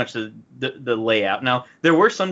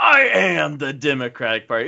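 slow scream, dragging every word; 2 semitones higher than usual. Quoting a favorite line from the first debate: Batman-style scream. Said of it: "It's like Batman screaming it".

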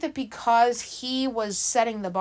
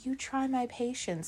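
mock-calm delivery, much quieter; 10 dB quieter than usual. Recounting a scene where a man laughs, then speaks; retelling a calm line. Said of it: "and then he calmly says".

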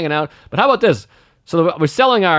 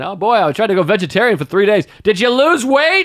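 mock drunk shouting, higher pitched; 5 semitones higher than usual. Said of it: "they get drunk and they start yelling out".

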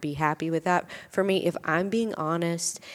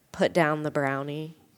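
plain

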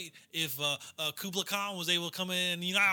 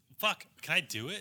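plain

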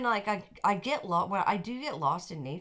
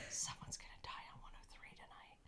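low-key, faint put-on whisper. Retelling what a woman said half to herself on a train, imitating her whispered remark, low-key whispered. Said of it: "low-key whispered".

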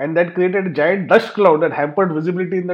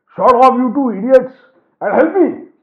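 muffled voice, higher pitch; 7 semitones higher, 5 dB louder than usual. Narrator reads Baba, helmet stuck, telling the two to help, in a muffled voice. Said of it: "said in a muffled voice".

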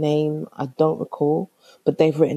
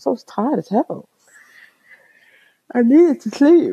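speaking through a yawn; 9 semitones higher, 5 dB louder than usual. Speaker recounting their first month to listeners, yawning. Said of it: "I'm so sorry about the yawning".

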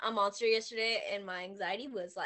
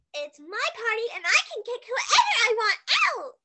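very high, loud, shrill, squeaky, swooping voice; 12 semitones higher, 6 dB louder than usual. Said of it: "My voice goes from loud, squeaky".

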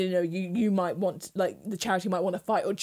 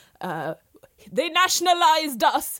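put-on Jamaican accent, much higher; 9 semitones higher, 6 dB louder than usual. Retelling a woman who quoted an activist in a put-on Jamaican accent. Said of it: "Did she just do a Jamaican accent".

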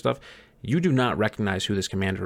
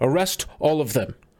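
short, commanding call with pitch raised; 5 semitones higher than usual. Game master voicing a regally dressed commander marching up, shouting. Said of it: "just shouts".

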